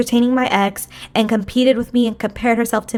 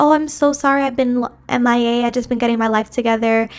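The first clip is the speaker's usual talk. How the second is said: mocking, phony, fake-sorry tone. Retelling a friend's short phone apology: imitating a phony apology. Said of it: "It was so phony".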